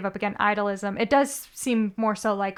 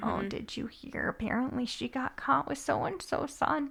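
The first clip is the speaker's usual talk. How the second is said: bad put-on gossipy church lady voice, higher, quieter; 4 semitones higher, 9 dB quieter than usual. Imitating church ladies gossiping about someone: bad church lady voice. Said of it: "That wasn't a very good church lady voice".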